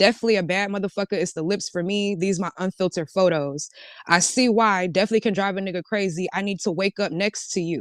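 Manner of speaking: normal talking voice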